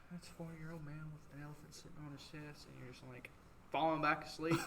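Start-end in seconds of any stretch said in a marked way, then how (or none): 0.1-2.7 hushed, very quiet, soothing voice, as over a P A. Imitating old Mister Adams calling out over the EMS tones: soothing voice. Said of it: "old Mister Adams' soo-, soothing voice".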